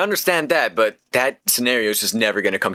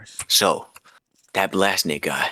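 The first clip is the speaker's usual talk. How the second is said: hushed, whispered voice; 3 semitones lower than usual. Answering a question about a feud with Blastnit, whispering. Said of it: "we're gonna have to whisper for this one".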